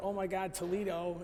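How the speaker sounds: ordinary talk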